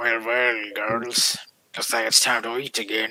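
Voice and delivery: hushed storybook big bad wolf voice. In character during a game, speaking as the big wolf to the girls: big wolf voice. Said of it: "You hear this coming from the big wolf".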